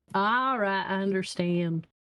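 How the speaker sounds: put-on Southern American accent. In a tabletop game, answering a character who refuses a discount, in a southern accent. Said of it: "in your southern accent".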